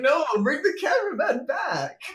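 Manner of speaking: high-pitched shout through laughter.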